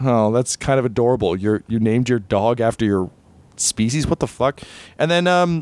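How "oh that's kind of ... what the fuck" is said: ordinary delivery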